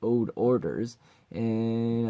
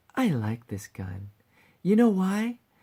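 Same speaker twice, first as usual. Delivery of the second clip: playful, menacing tone, pitched up; 8 semitones higher than usual. Voice actor reading line two of a script: menacing yet playful. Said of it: "menacing yet playful".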